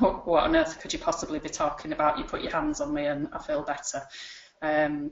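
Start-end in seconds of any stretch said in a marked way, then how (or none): none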